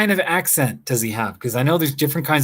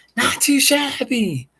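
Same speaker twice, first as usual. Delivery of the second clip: put-on British accent, very high; 13 semitones higher than usual. Speaker shows how he would say a phrase, British accent. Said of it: "it's a British person talking".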